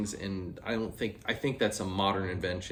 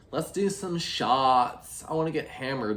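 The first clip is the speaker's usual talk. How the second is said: put-on high, ditzy, airhead party-girl voice; 5 semitones higher, 4 dB louder than usual. Describing customers who just want to do shots, in a dumb blonde voice. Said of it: "a very accurate, dumb blonde voice".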